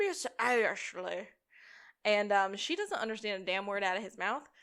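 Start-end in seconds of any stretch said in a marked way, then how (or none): 0.0-1.3 bad, weird southern drawl. Retelling how Sean asks Ashley to lunch: Sean's weird southern drawl. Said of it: "asks very badly in a very weird southern drawl".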